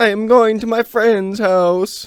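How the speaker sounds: put-on Italian accent, very high-pitched and loud. Role-playing an Uber passenger, speaker answers in an Italian accent. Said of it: "It's honestly a pretty good Italian accent".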